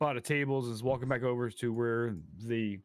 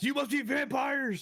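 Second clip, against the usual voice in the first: very high laugh, words bubbling out; 13 semitones higher than usual. Voicing a woman character to the other players, laughing while speaking. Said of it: "As she laughs".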